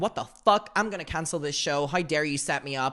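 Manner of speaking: put-on angry, ranting voice. Retelling a phone call to the CEO, imitating his own angry call. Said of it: "I'm so fucking angry".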